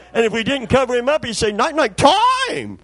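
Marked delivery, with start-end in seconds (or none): 1.5-2.6 parrot-like voice, stressing the word. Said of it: "Put the emphasis on it".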